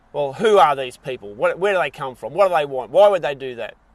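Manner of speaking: mock snippy, irritable, loud and narky. Imitating people who argue without knowing the facts: imitating a narky tone. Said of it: "talk to you in that sort of tone".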